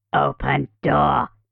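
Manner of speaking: rough, twisted, guttural monster voice. Narrating a horror scene, a creature calls to the teens from outdoors: twisted, guttural creature voice. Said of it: "a twisted, guttural voice calls to them from outdoors".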